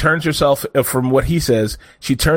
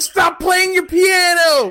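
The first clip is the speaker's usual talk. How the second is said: put-on high-pitched yelling. Telling how a father yelled at his small daughter, retelling a dad yelling. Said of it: "he's like yelling at her".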